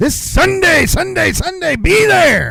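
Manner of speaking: very high, hyped monster truck race announcer voice. Showing how races were called at the raceway: monster truck raceway announcer voice. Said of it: "Yes, I do that".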